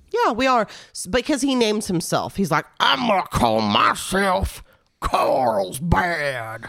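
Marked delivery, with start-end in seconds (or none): 2.8-6.6 very slow, put-on Texan drawl. Quoting the dummy as it names itself: imitating a Texan accent. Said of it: "He sounds like a Texan".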